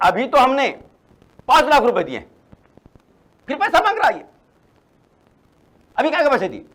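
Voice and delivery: loud, high, angry outburst.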